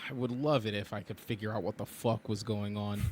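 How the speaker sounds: plain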